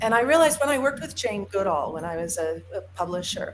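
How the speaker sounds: usual speaking voice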